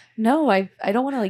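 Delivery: loud, high-pitched, emphatic, insistent tone.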